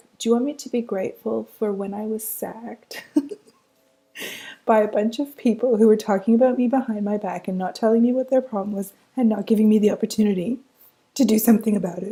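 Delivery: voice catching with emotion. Speaker inviting listeners to practise specific gratitude, getting choked up. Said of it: "my voice got all choked up there".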